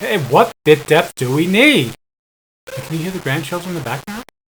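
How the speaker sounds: loud, projecting voice. Testing the recording, switching from regular to a loud voice. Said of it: "now I'm going to do a loud voice".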